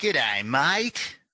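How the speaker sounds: bad, terrible put-on Australian accent. Asked for an opening salutation, the guest greets the host in a terrible Aussie accent. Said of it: "it's a terrible accent".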